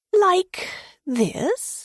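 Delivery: very high-pitched, taunting, mocking tone. Reading a story aloud, a noble stirring noodles: asking mockingly. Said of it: "she asked mockingly".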